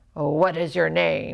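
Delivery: gruff, low, rough growling. Reading a story aloud, voicing an Irish chieftain addressing the boy he bought: rough growl. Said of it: "he growled roughly".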